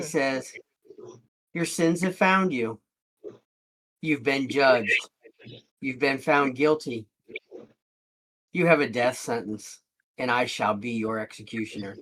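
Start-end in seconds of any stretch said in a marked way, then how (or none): 1.5-12.0 half-whisper, pitched very low. Narrating a story, the speaker gives a man's words in his mind: half-whispering very low. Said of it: "he whispers it very low".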